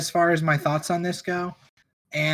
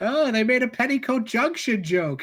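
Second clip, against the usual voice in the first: put-on high, doddering elderly old-person voice; 6 semitones higher than usual. Joking about the nursing home listening crowd: imitating an elderly listener. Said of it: "nursing home listening crowd".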